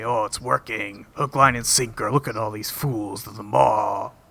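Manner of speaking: put-on Russian accent. Retelling a man's phone call from a movie, Russian accent. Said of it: "Really good Russian accent".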